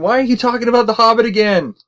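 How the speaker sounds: high-pitched mock screaming. Imagining a listener in his car yelling at the podcast: imitating Chance screaming. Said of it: "he's probably sitting there screaming at us".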